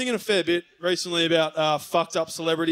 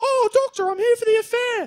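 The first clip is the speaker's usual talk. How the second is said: very high put-on woman's voice; 3 dB louder than usual. Acting out the mistress lady arriving for the affair: put-on mistress lady voice. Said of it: "I'm sorry about the voice".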